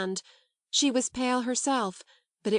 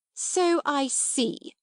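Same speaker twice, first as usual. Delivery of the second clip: scornful, withering tone, pitched high; 5 semitones higher than usual. Reading a story aloud, the angry headmistress answers the girl: withering. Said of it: "said Miss Minchin witheringly".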